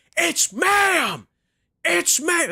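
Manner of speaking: shrill, very high, very slow, drawn-out meltdown shouting. Retelling a viral video of a customer freaking out: imitating someone freaking out. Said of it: "fucking freaking out in GameStop".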